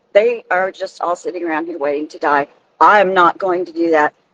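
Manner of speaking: plain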